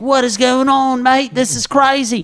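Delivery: put-on very high-pitched Australian accent. Retelling a rugby game, imitating the australian players celebrating: mock australian accent. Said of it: "They're fucking like".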